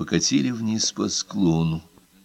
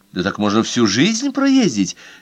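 ordinary delivery

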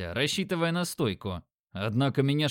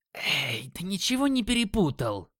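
hissing throughout, hissed challenging tone; 4 semitones higher than usual. A green-skinned woman snaps at someone who cut in line, hissing. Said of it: "Прошипела зеленокожая".

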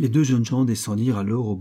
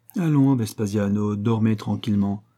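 plain reading voice

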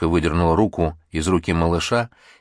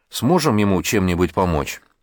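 plain reading voice

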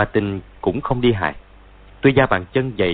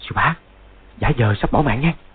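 quiet, hushed, much higher pitch; 4 semitones higher than usual. Feigning grave injury, a disciple speaks aside to his martial uncle, said quietly. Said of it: "Rồi nói nhỏ".

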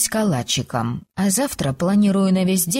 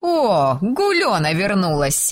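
glad, happy exclamation. A girl in the room greets the narrator on her return, exclaiming happily. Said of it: "воскликнула Иртея, радостно улыбнувшись".

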